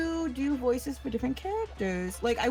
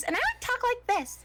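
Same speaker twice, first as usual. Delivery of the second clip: very high-pitched character voice; 12 semitones higher than usual. Describing the voice used for Fef, the speaker demonstrates it: really high-pitched Fef voice. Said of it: "I go into this really high pitched voice".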